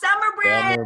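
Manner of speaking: shouting loudly. After the host's countdown, the group calls back the name: loud shout. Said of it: "everybody say Summer Bridge really loud".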